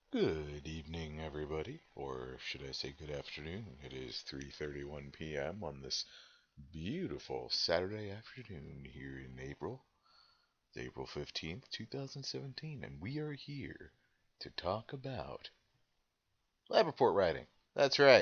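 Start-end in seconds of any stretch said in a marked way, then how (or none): 0.1-15.5 put-on deep, contemplative voice, rising in pitch. Host greets everybody to open a session, in a deep contemplative voice. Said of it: "that's my deep contemplative voice".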